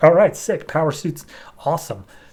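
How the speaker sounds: usual speaking voice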